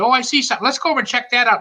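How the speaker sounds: high, fast, eager chatter.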